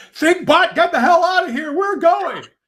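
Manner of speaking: high-pitched scream at the top of the lungs. Calling out to Thinkbot, screaming at the top of one's lungs. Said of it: "I scream at the top of my lungs".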